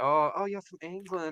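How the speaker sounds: put-on American accent. Retelling what someone American says on meeting you: imitating an American. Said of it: "if you meet someone American or whatever, and they'll be like".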